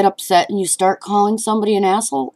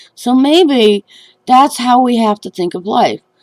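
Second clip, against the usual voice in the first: ordinary talk, nothing marked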